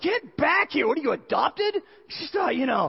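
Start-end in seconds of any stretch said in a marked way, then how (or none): 0.0-1.8 sharp, high-pitched yelling. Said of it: "I'm just yelling at him going".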